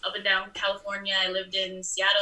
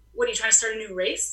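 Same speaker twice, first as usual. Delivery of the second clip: ordinary delivery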